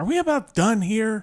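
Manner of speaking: play-acted rude, exasperated tone. Retelling an exasperated question to the dentist: imitating own not-nice tone. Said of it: "not a nice voice".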